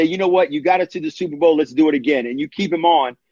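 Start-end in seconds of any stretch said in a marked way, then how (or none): none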